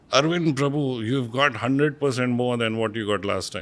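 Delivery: biting, cutting sarcasm. Retelling a professor announcing marks: imitating Mister Abhyankar sarcastically. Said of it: "he sarcastically said".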